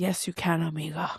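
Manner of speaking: imitated confident, self-assured tone. Retelling her own reply to a friend's request: imitating her own confident reply. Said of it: "confidently, I said".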